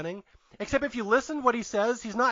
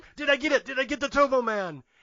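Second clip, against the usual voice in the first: put-on odd Austrian accent, pitched up; 5 semitones higher than usual. Retelling a movie scene where Arnold pounds on the radio booth glass, odd Austrian accent. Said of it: "with an odd Austrian accent".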